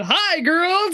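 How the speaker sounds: acted booming call-out. Retelling how a character greets the girls: Ned's booming voice. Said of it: "in a booming voice".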